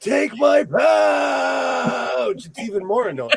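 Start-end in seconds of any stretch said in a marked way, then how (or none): 0.0-2.5 high, very slow cricket scream. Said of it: "I picture cricket screaming".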